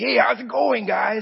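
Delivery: cheery, upbeat, bubbly, high, creaky voice. Retelling how a bubbly taxi driver sounded: imitating Chad's bubbly greeting. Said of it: "just like Chad".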